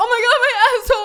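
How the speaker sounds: shrill pained shriek, very high and very loud. Retelling a painful moment in a car to the listener; retelling a scream. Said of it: "and I'm screaming like".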